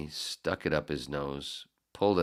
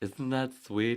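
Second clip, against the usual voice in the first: Swedish accent with higher pitch; 9 semitones higher than usual. Remarking on being mentioned in upcoming stories, in a Swedish-sounding accent. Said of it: "why do you sound so Swedish?".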